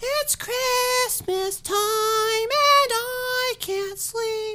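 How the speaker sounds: put-on very high, drawn-out little boy voice with wonder. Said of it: "precious voice of a little boy".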